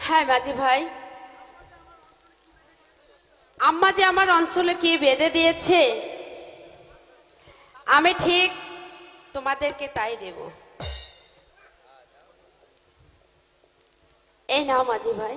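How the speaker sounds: talking through tears. A girl hands the boatmen their promised tip, crying while speaking. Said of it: "তুমি কাঁদছো কেন?".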